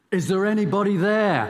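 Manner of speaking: loud, high shout directed upward. A storyteller voices a man hanging from a tree high above the ocean, shouting up. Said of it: "he shouts up".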